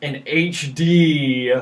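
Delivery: thick, mocking, heavy sarcasm, D drawn out. Describing playing a remaster of an old game, heavy sarcasm on its name. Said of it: "I say that with as much sarcasm as possible".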